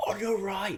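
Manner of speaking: very high-pitched screaming shout. Retelling screaming at other riders during a race: imitating own screaming. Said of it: "I was screaming".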